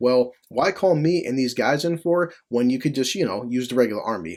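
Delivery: plain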